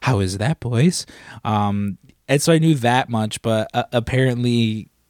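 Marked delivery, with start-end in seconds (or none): 0.0-1.1 eerie, weird, creepy, otherworldly alien creature voice. Retelling what a man said after getting up: weird creepy alien voice. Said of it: "in his weird, creepy, like, alien voice".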